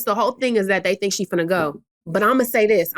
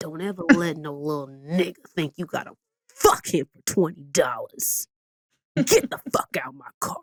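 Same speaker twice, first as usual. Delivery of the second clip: theatrical, low, dramatic dad voice; 5 semitones lower, 4 dB quieter than usual. Retelling a father's warning in his car: imitating dad's voice. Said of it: "so I have to do his voice".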